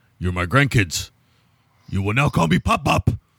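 cracking, breaking movie-star voice. Retelling a movie scene where the grown-up bird greets grandkids: Andy Garcia impression. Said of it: "That was my Andy Garcia impersonation there".

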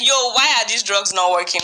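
ordinary delivery

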